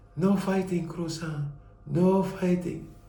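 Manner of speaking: gently hushed voice. Recalling one of his favorite memories, imitating Kawata's soft voice. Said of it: "Kawata had that soft voice".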